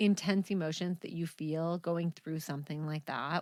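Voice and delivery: ordinary talk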